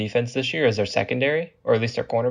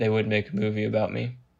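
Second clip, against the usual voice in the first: put-on deadpan, lower pitch, no smirk; 3 semitones lower, 4 dB quieter than usual. Retelling a coach's answer to who would play him in a movie; retelling a deadpan line. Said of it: "deadpan, no smirk".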